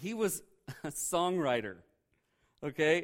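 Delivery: slow speech, laughing through the words. Explaining a scripture passage about Solomon, laughing while talking. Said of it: "I don't know why I'm laughing".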